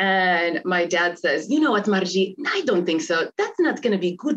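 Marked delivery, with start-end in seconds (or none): 1.5-4.4 put-on thick, laid-on Polish accent. Quoting the father's reply to his daughter, in a thick polish accent. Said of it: "they both have very thick Polish accents".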